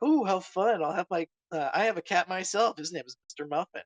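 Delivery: curious, inquisitive voice. Retelling a story scene, quoting Missus Mark about her cat: imitating Missus Mark. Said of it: "Missus Mark is like".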